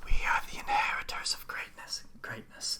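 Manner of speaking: soft, surrounding echoey whisper. A voice answers Morak's question inside everyone's mind, echoey voice all around. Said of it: "that echoey voice just all around you".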